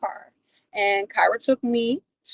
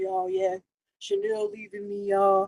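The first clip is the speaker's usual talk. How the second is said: fake heartbroken, far from her own voice. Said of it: "he kept acting like".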